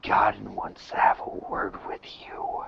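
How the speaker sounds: very quiet, hushed whisper, close to the ear. Speaking in character to a captive, whispering very quietly. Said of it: "I'm whispering very quietly into his ear".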